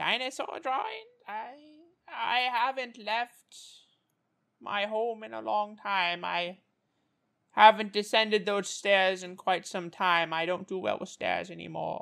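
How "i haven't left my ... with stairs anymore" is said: soft put-on voice of an impossibly old crone. Playing an impossibly old, nearly blind woman answering the party; ancient old woman voice. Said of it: "You realize it's a human woman, impossibly old, crippled by arthritis, blinded by cataracts".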